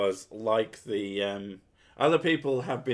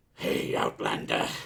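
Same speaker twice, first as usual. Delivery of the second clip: rough, creaky video-game character voice; 12 semitones lower than usual. Showing how they start a character voice, doing the Aru voice. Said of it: "every time I start talking like her".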